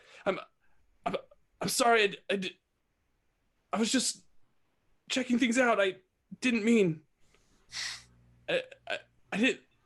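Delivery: high whimpering voice. Voicing a creature on fire that apologizes after engaging the party, whimpering apology. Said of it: "and it kind of whimpers".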